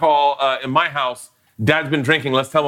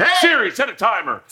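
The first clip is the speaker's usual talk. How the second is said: pitched-up shouting in a fifties dad voice; 8 semitones higher than usual. Playing a fifties dad ordering a voice assistant around: imitating a fifties dad yelling. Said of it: "closest I'll ever become to being a fifties dad".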